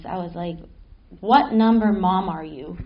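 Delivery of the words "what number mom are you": mock earnest, grave, dead-serious tone. Retelling asking their mom a question as a four-year-old: imitating own serious question. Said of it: "really, really serious".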